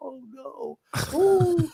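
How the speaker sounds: high crestfallen moan. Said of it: "he was all crestfallen".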